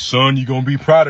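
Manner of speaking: put-on Panamanian accent with voice dropped deep. Retelling what a man said after quitting his job, deep Panamanian voice. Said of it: "Deep ass Panamanian voice".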